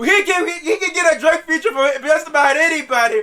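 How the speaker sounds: disbelieving yell with laughter. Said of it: "I'm like".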